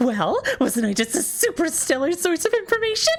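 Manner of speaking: mock overhyped eclectic nerd voice. Imitating a character's line: imitating an overhyped eclectic nerd. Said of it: "eclectic nerd that gets so overhyped in their voice acting".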